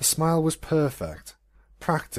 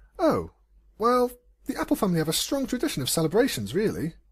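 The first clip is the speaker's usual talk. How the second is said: nervous, uneasy, higher-pitched voice; 8 semitones higher than usual. Narrator reads Twilight answering Celestia's praise, nervous. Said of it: "Twilight said nervously".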